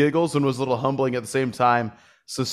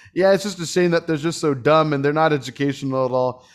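normal talking voice

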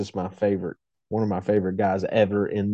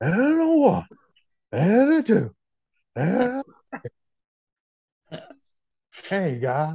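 put-on baseball announcer voice, pitched higher; 11 semitones higher than usual. Answering a request to do a Harry Caray impression: Harry Caray impression. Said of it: "Can you do a Harry Carey impression?".

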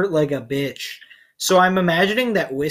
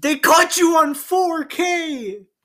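mock shrieking, very high and dragged out; 12 semitones higher than usual. Retelling what they were about to scream at a caught player: imitating own planned scream. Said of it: "I was getting ready to just scream".

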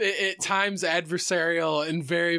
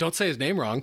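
normal talking voice

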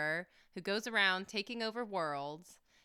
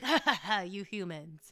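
put-on mocking laugh. Imitating a movie character who laughs at the fighters' plight: put-on mocking laugh. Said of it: "he just kinda laughs at their plight".

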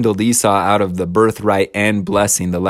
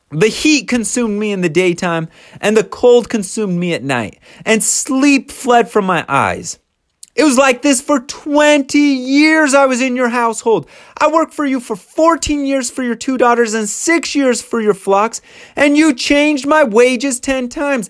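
put-on yelling voice, pitched higher. Retelling a son-in-law's rant at his father-in-law: imitating someone yelling. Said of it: "And he yells".

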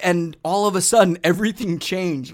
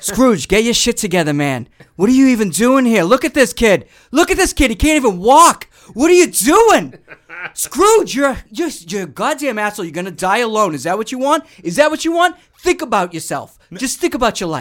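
heavy, loud, high-pitched Boston accent; 5 semitones higher, 6 dB louder than usual. Asked for a Boston version of a Scrooge scene, performing it: Boston accent. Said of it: "did you do one with a Boston flair to it?".

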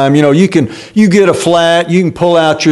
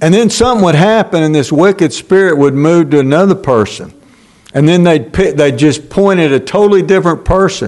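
usual speaking voice

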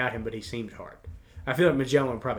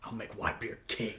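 gritty, fast, hushed whisper; 3 semitones lower, 12 dB quieter than usual. Comparing dub and sub, quoting a character's line in a gritty voice. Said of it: "he just says it's so gritty".

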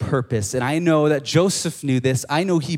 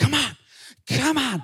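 very high-pitched, urging, hurrying voice; 11 semitones higher than usual. Retelling a mom dragging her crying kid on a leash: imitating a mom urging her kid. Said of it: "the mom's like".

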